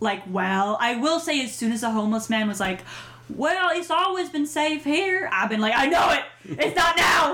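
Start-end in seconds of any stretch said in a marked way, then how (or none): 3.3-5.3 high, put-on American southern accent. Quoting the homeless man's line, southern accent. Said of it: "I don't know why I've been doing a southern accent".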